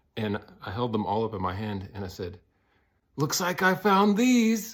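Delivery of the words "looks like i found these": shrill, high, loud, raised yell. Retelling a dream, finding hidden microphones: imitating own yell. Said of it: "But I yelled it".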